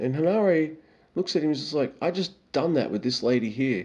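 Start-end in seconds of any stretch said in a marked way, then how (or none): 2.0-3.9 weary, exasperated, dismissive tone. Retelling a reply to someone's discovery: imitating Henare's exasperated tone. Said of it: "the tone that Henare had".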